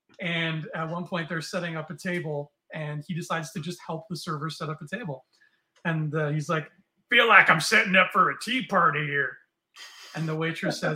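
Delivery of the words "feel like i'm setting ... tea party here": put-on older, down-home American man's voice. Retelling an older fella helping a server set up a table: imitating Earl's down-home American voice. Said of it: "He talks like a real down home American guy".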